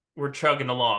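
ordinary talk, nothing marked

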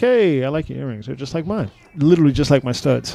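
ordinary talk

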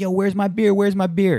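loud, high hollering yell. Narrating a video with the audio up, the speaker quotes a man: retelling a yell. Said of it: "He's yelling like".

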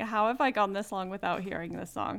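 usual speaking voice

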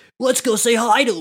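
put-on surfer dude voice. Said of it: "the surfer dude".

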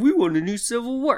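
high, dopey, mocking put-on dumb voice. Mocking people of a different political ideology, in a dumb mocking voice.

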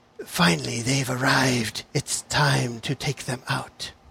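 soft, hissing female voice. Voicing the being's thoughts as they come through, in a hissing female voice. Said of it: "a kind of like a hissing female voice says".

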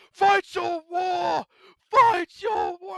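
over-the-top, very high, loud, drawn-out full-voice shout. Recapping a game, the speaker imitates a dying character's line: retelling a full-voice shout. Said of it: "he's like shouting at full voice".

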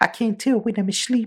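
put-on very high-pitched, weird British accent. Describing an actor's voice in a new show: imitating Oscar Isaac's weird British accent. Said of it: "talking with, like, a weird British accent".

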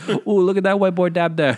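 broad put-on Jamaican accent. Imitating the man running the place reacting to a dab, stereotypical Jamaican accent. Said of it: "the world's most stereotypical Jamaican".

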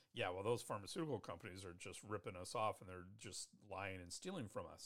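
snide, scoffing, sneering know-it-all tone. A teacher retells a class member's comment; imitating a snide remark. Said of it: "make a snide comment and say".

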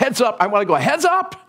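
mock call, high pitched and rising.

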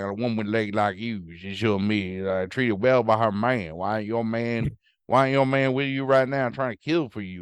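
put-on toothless manner of speaking. Imitating a character hitting on a woman, in a toothless New Orleans accent. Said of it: "he talks like he has no teeth".

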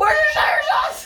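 high, loud scream.

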